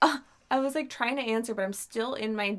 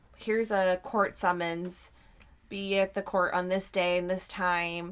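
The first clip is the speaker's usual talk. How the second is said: ordinary talk, nothing marked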